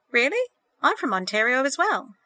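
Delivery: genial, sociable, amiable, friendly tone. James replies to Sandra, amiably. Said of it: "James said amiably".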